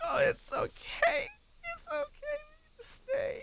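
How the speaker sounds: mock tearful, very high, soft, slow crying. Retelling a woman answering her boyfriend's question, imitating her crying. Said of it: "She was crying".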